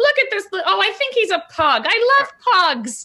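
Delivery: very high, doting coo of a noble lady. Voicing a noble lady who walks over to a small dog: noble lady cooing at a dog. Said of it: "And she's just like".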